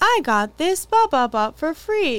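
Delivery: canned, stock line delivery like a game background character. Imitating a woman in an online ad, in an NPC voice. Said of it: "it's very like NPC voice".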